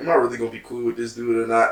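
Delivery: ordinary talk, nothing marked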